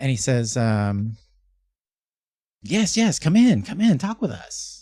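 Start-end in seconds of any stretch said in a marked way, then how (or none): 2.6-4.8 cheerful, jolly voice, high and sing-song. Mister Light greets the group in his trailer, jovial Mister Light. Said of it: "Mister Light is uh very jovial".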